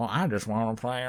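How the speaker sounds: weak, half-hearted put-on character voice, not quite landed. Quoting a line from The Waterboy: attempted Adam Sandler voice. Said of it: "I can't do Adam Sandler's voice".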